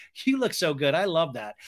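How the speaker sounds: ordinary delivery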